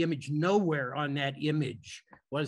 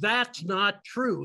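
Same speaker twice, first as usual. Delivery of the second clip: mock full-volume booming shout, loudest voice possible, wall-shaking; 5 semitones higher, 3 dB louder than usual. Standing up to contradict another speaker's claim, retelling a loud shout. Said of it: "in the loudest voice I could muster".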